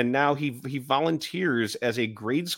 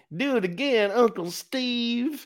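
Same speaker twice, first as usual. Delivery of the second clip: put-on very high, slow Southern kid drawl, word stretched; 10 semitones higher than usual. Retelling what a kid in a video said: imitating a kid's southern accent. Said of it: "that's country".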